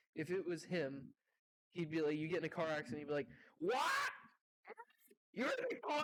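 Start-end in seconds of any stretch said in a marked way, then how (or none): 3.6-6.1 very high, losing-it outburst, acted out. Imagining the insurance duck's voice actor reacting to a car accident: imitating someone flipping out. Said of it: "he'd just start flipping shit".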